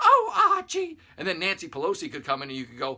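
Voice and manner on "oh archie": very high, very loud, shrill exclamation. Acting out a sitcom scene, Edith answering: imitating Edith Bunker. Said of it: "Edith, played by the liberal media, would go".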